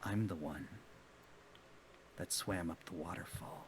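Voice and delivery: close, very hushed, barely audible whisper. Narrating a story, the teller voices a man who leans forward and whispers. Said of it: "he leans forward and he whispers".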